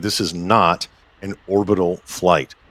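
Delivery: slow, deliberate, word-by-word emphasis. Clarifying what kind of flight it is, said slowly. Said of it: "I'm going to say that slowly".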